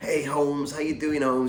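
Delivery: mixed Cockney and Jamaican dialect. Retelling stopping at Frank's door and his greeting, imitating Frank's Cockney-Jamaican dialect. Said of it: "sort of Cockney Jamaican kind of mixed dialect".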